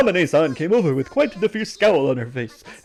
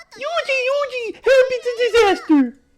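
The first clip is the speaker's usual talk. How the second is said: put-on very high, girly character voice. Claiming to imitate Chiru Chiru, the speaker does a Chiru Chiru impression. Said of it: "I can imitate Chiru Chiru".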